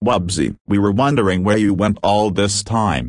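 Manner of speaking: ordinary delivery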